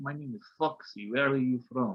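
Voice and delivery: soft, sultry, put-on Russian accent. Retelling what a woman named Foxy said to the speaker: imitating Foxy's Russian accent. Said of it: "fucking like Russian ass accent".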